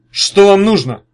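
very loud, insolent, brazen, defiant tone. A disheveled man swinging an axe questions newcomers, defiant, very insolent. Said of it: "с вызовом, очень нагло, спросил взъерошенный".

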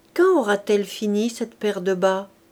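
ordinary delivery

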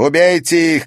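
yelled, high, loud shout. Narrator reads a woman ordering her accomplices, shouting. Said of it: "крикнула Ирма".

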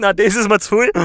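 loud, high, exasperated, fed-up outburst.

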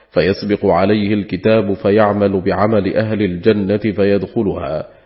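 ordinary delivery

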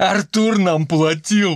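shrill, frightened squealing shriek. Narrator reads a chemist's line as he pulls up his legs, shrieking. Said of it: "снова взвизгнул химик".

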